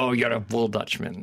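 ordinary talk

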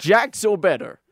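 loud, showy, put-on American accent. Asked by the others to say the phrase again, in a put-on American accent. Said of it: "Do it again".

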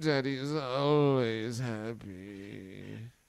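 slow, soft, strained, through gritted teeth.

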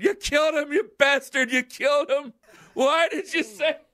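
mock frantic, accusing, high, hysterical screaming. Retelling calling a friend in hysterics, retelling hysterical screaming into the phone. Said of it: "I'm screaming".

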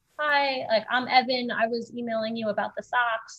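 quiet, awkward, low-key delivery. Retelling how a buyer came up after the set: imitating Evan speaking quietly and awkwardly. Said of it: "very awkwardly, like, quietly came up to me".

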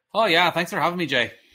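put-on Irish accent, loud.

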